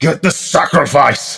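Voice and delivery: high, commanding, authoritative call. Narrating a ritual scene, voicing the man giving the orders: shouting. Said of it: "He sort of shouts".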